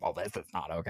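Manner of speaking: low, soft, entitled, complaining, bitchy voice. Imagining people's reaction if things swing back, in a mock bitchy Karen voice. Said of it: "it's my bitchy Karen voice".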